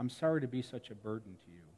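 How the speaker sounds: very quiet, soft-spoken, barely above a murmur. Retelling what a dying teenager said after grabbing an arm: imitating someone speaking very quietly. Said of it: "he said very quietly".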